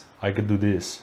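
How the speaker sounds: put-on Russian accent. Offering to announce the match in an accent: put-on Russian accent. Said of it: "the Russian one?".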